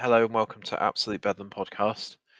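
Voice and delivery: slightly downbeat, flat, low-energy monotone drone. Podcast host opening the show, slightly monotone and downbeaten. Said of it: "Got a slightly monotone, downbeaten version of [name] today".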